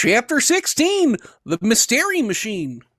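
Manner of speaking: loud, big cartoon character voice. Reading a story chapter aloud: Coach Z voice. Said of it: "perfect voice to do something like this, and that is uh, Coach Z from Homestar Runner".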